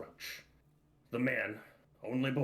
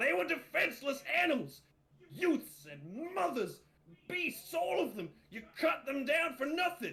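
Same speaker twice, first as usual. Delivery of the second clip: shrill, enraged, high-pitched furious shouting. Playing a character who attacks a boy for killing animals: furious shouting. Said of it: "shouting all the while".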